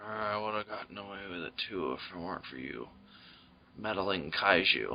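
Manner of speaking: very low, deep-voiced delivery. Dubbing a monster on screen as a movie star: Harrison Ford voice. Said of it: "Harrison Ford".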